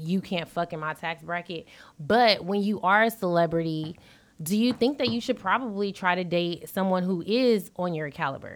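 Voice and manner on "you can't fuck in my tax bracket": put-on rude, harsh tone, much quieter. Quoting what a man said about dating, imitating a rude, harsh tone. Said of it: "the way he said it was really rude and harsh".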